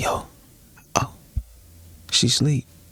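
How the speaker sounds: soft, hushed, quiet murmur under the breath. Retelling what he said: imitating someone talking quietly. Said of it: "And he talking quiet".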